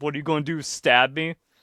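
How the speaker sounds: put-on sarcastic tone. Imagining how Taylor would die in a horror story: sarcastic, imitating Taylor. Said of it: "go out sarcastically".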